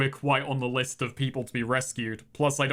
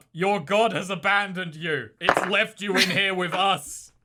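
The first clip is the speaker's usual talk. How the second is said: pitched-up, shouted yell; 6 semitones higher, 3 dB louder than usual. Aegis, down the trapdoor, yells up to those above, yelling. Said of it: "just yells up".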